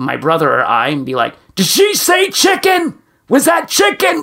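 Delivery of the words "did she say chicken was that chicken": loud, raised, very high-pitched voice. Retelling a hard-of-hearing father asking his children about the specials, retelling Dad's loud question. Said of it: "in a loud voice".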